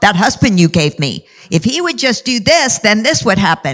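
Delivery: grumbling, nagging, complaining voice. Speaking about prayer, the speaker imitates someone nagging to the Lord, mock nagging complaint. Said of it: "you're nagging to the Lord".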